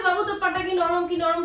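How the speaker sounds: ordinary delivery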